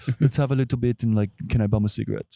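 put-on casual, relaxed French accent. Retelling what a man said while pouring a pricey drink: French accent. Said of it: "I'm going to like talk in a French accent".

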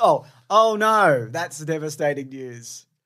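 sarcastic sympathy. Answering a news item in the segment game, sarcastic. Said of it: "You're being sarcastic".

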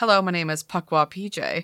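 normal talking voice

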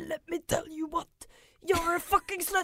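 high, ranting, raving, shouting outburst. Speaker demonstrates what they are like when shouting and raving: retold shouting and raving. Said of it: "stående og rope og rave og være sånn her".

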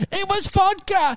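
put-on shrieking scream. Retelling how a friend shrieked and laughed: imitating Brett Blake shrieking. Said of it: "Brett Blake shrieking, laughing like some sort of hyena and screaming".

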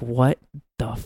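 ordinary talk

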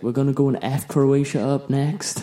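put-on American accent. A speaker quotes a team's manager to a friend, imitating an American accent. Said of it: "He's got like an American accent".

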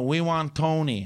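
put-on crude caricature Korean accent. Retelling what tour guests kept asking for: imitating a mocking Korean accent.

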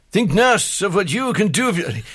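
badly done put-on voice, shrill, very high, loud. Retelling a man doing a bad impersonation: bad John F Kennedy impression. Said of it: "here's my John F Kennedy impersonation".

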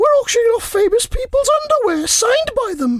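very high, shrill, falsetto put-on woman's voice. Reading aloud a story about a woman asking for a charity donation, in a put-on lady's voice. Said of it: "That's me doing my lady's voice there".

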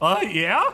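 put-on crackling, voice-cracking teenage voice. Telling a story, voicing a scrawny young guard: crackling teenage voice. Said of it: "That was my angsty teenager with a crackling voice".

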